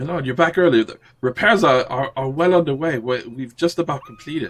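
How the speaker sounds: eager, excited, high-pitched delivery. Playing a servant greeting his lord who has returned early, excited. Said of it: "you're so excited you didn't know who to run to".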